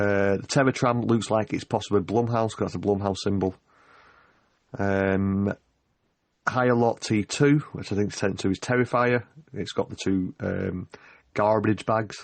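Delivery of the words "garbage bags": terrible, bad, fake put-on American accent. Describing horror-themed attractions, the speaker slips into a bad American accent. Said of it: "That's a terrible American accent".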